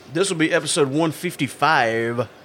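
radio host announcer voice. Announcing the episode number, in a DJ voice. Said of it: "There's a DJ voice again".

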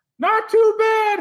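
very high, loud ventriloquist-dummy squeak. Answering for the ventriloquist dummy after it is greeted, in a dummy voice. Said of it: "I started up a ventriloquism".

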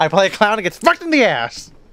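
exaggerated, high, swooping sing-song delivery. Continuing an exaggerated impression of an impression: Paul Giamatti impression. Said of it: "do an impression of an impression".

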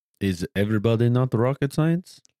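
put-on Russian accent. Joking about not being a rocket scientist: put-on russian accent. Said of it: "I'm not gonna be able to not talk in this voice now".

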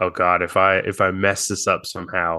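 ordinary delivery

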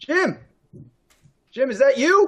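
very high, loud, hollered calling yell. Calling out in character to someone approaching: in-character yell. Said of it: "You all hear [name] yell".

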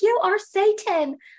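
high, loud, slow yelling.

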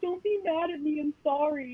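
crying, very high, slow tearful pleading. Retelling own past reaction when parents yelled: imitating own past crying.

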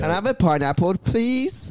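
Persian-inflected English, high. Showing how Persians say it, in a Persian accent. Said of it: "That's how Persians say it".

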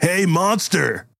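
shrill, very high, acted-out yell. Retelling how a man in a tank top yelled at another man, retelling a yell. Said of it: "he actually yells at at Henry".

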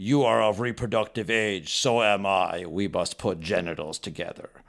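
put-on alien creature voice. Offering a joke pickup line and coming out like Morbo from Futurama. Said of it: "You sounded like Morbo from Futurama".

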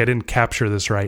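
ordinary talk, nothing marked

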